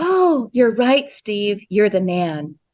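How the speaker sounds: put-on very girly voice. Recounting how Wonder Woman speaks to Steve, very girly Wonder Woman voice. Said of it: "she says it in a very girly voice".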